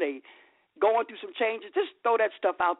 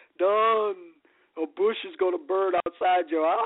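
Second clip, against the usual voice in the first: put-on divine, godlike voice. Retelling God telling Don to play a track, in God voice. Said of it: "I love when I do God's voice".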